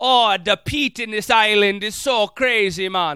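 loud, very slow, drawn-out drawl. Imitating a drunk whiskey drinker: put-on drunk Irish-Jamaican accent. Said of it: "you're just like".

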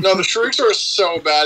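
ordinary talk, nothing marked

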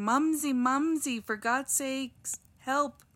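high, slow, drawn-out whiny scream. Retelling the attack as Henry screams to Ruth for help, mock-whiny Henry screaming. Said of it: "In a super whiny voice".

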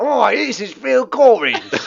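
put-on high Cockney accent. Retelling what a man said: imitating a Cockney accent. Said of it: "He talked like a Cockney guy".

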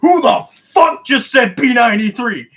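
top-of-the-lungs shriek, very loud and high. Retelling an in-game moment, imitating a nearby player screaming at the top of their lungs. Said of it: "somebody at the top of their lungs screaming".

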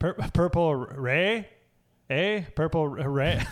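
failed Canadian accent attempt. Asking a fellow player a question during a game, attempted Canadian accent. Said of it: "I can't do the Canada accent".

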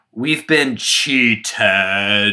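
very deep, big preacher's voice. Retelling a preacher voicing the earliest laborers' response: imitating Eugene Lowry's deep voice. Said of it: "like, real deep voice".

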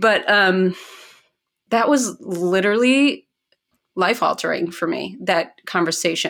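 choked-up, emotional voice catching. Reflecting on a life-altering conversation with friends, a little choked up. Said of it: "I'm getting a little choked up".

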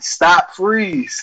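acted, halfhearted, mild called-out delivery. Retelling a man running for the door with stolen cereal, retelling a yell. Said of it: "I'm yelling".

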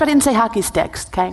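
plain

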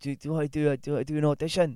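put-on Scottish accent. Retelling what a man asked the speaker, in his big Scottish accent. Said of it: "in his big Scottish accent".

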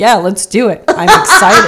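loud, dry, dead-serious, unexcited tone. Podcast host recalls a co-host agreeing to start the podcast, imitating Derek's monotone. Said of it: "you so monotonely said".

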